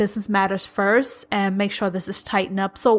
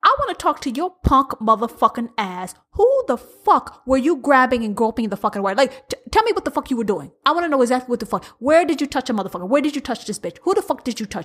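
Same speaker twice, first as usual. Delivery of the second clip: put-on furious voice, pitched higher; 3 semitones higher than usual. Acting out Amanda confronting Charlie: as Amanda, furious at Charlie. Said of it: "this is Amanda talking to Charlie".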